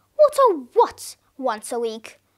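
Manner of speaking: usual speaking voice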